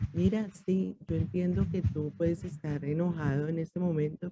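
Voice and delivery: soft, quiet, gentle voice without force. Showing how to answer someone who is shouting: soft, quiet voice. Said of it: "uno le habla pasito".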